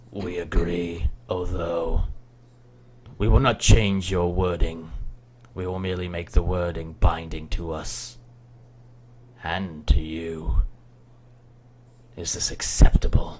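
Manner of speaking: dark, gruff voice. As the wolves, answering the players in their heads, in a deep, dark, gruff voice. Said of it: "and you hear a much deeper, darker, gruffer voice in your heads. What binding will it have? / and you hear a much deeper, darker, gruffer voice in your heads. / gruffer voice in your heads".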